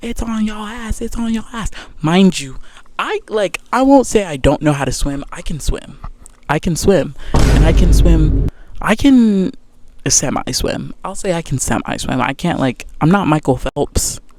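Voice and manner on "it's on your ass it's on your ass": acted-out high yell, repeated twice over. Retelling a guy in the water warning about a shark: imitating someone yelling. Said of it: "he was yelling".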